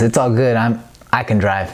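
plain

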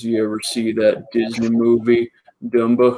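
put-on drawled American Southern accent, words stretched out. Retelling a roommate's instant comeback about a silly name, in southern drawl. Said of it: "just in this southern draw".

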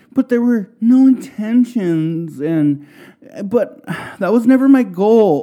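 high, whiny, self-pitying voice, playing the innocent.

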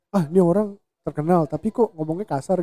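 ordinary talk

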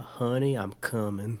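put-on cowboy southern drawl. After talking about the game's cowboy voice, a streamer slips into Arthur Morgan southern drawl. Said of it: "I don't think Arthur Morgan did not say".

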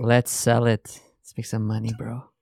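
put-on serious, creepy voice. Joking around with the others, in a put-on serious creepy voice. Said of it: "Why did he have to use that voice?".

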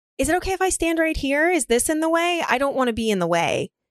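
sarcastic, fake-courteous tone. Retelling what a kid standing in the way said: imitating a sarcastic kid. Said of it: "He was trying to be a funny asshole".

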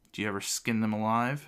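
ordinary delivery

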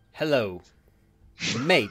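put-on commoner slang. Asked to talk in commoner slang, greeting: put-on commoner slang. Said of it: "Do a bit of slang for me".

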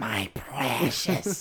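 possessive, covetous, slinking cave-creature voice. Retelling how another speaker watched TV: Gollum voice. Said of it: "like Gollum".

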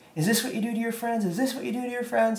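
very high, piercing, shrill, repeated screaming. Retelling what a woman outside the door was screaming: imitating someone screaming. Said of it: "screaming that".

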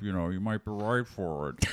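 put-on slurred voice. Retelling what a producer said, in an impression of him. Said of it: "this is my impression of".

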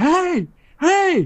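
mock very high, alarmed yell of "hey". Retelling being cornered by a dog, the speaker re-enacts yelling at it. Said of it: "So I just started yelling".

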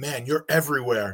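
put-on whisper. Retelling what Rashad whispered on the way to the cage: imitating Rashad whispering. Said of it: "he whispers in my ear".

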